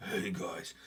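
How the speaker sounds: barely-there, breathy whisper. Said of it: "I just don't have the voice for".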